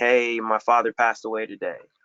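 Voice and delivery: plain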